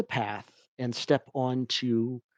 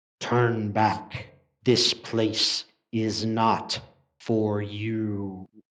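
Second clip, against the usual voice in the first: menacing, threatening growling wolf voice, drawn-out "you"; 3 semitones lower than usual. Game master voices a wolf spirit as the players approach it, with a menacing growl. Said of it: "it growls menacingly and says".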